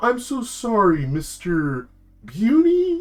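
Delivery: very high, swooping, snide cartoon-critter drawl. Retelling a call about missing channels, imitating a snarky turtle. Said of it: "He has this like really snarky voice".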